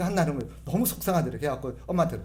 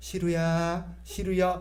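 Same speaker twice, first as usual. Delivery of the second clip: sweet, tender, affectionate calling tone; 3 semitones higher than usual. Imitating how someone calls the cat 시루, imitating a sweet, kind tone. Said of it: "고양이를 대하는 말투가 너무 친절한 거예요".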